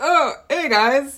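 mock stiff, self-conscious, very loud, high voice. Retelling own attempts at starting the show: imitating own awkward greeting. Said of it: "I just feel awkward and like".

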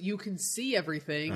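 ordinary talk

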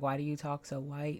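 plain

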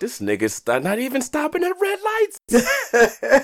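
put-on very high, slow, awestruck kid voice. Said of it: "And I'm like".

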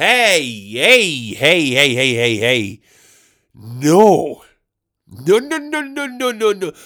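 very slow, loud, drawn-out "no"s, rising. Acting out own reaction to winning the lottery jackpot: pretend lottery jackpot win reaction. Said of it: "This is my impression of me if slash when I win the jackpot".

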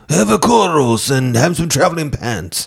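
mock Greek accent. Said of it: "Nailed it".

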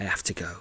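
uneasy half-whisper, soft and hushed. Reading a story aloud, an unseen ally leaving: half-whispering uneasily. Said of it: "she whispers".

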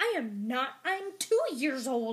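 put-on slow, play-acted, sassy little teenage tone. Retelling a young dragon's reply about being a hatchling: imitating a sassy retort. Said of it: "she gets all sassy".

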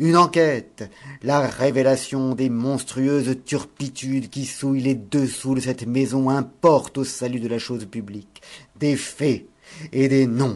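very loud, shrill, strident trumpet-like cry. A man suddenly rouses from his silence and calls out: strident trumpet-call cry. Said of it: "d'une voix qui sonna en appel strident de trompette".

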